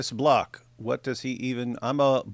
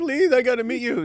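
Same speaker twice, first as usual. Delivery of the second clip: very high-pitched, pleading, begging tone; 11 semitones higher, 4 dB louder than usual. Retelling how Malik asked to meet her: imitating Malik begging. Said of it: "Malik begging".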